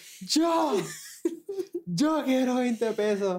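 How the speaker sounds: very high, long stretched-out, drawn-out shout. Retelling how someone shouted to win twenty dollars: imitating someone shouting. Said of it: "ella gritó".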